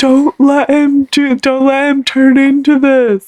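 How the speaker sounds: very slow, high, drawn-out blubbering crying voice. Retelling a brother crying while pleading: imitating someone crying. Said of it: "crying to me".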